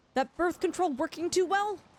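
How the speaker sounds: mock loud, not-so-quiet half shout. Retelling what an auntie yelled at a family gathering: imitating an aunt yelling. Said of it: "I think she kind of yelled".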